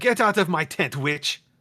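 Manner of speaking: shouting. Narrator voicing a woman ordering a witch out of her tent, yelling. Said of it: "She suddenly yells".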